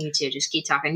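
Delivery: soft, low, hushed aside. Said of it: "I'm whispering to them".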